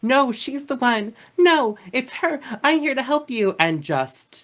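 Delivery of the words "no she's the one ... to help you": frantic, very high, panicked yelling. Telling a story about being attacked, the speaker retells her own yell. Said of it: "I'm just like yelling".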